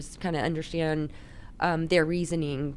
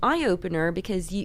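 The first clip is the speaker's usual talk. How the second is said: ordinary delivery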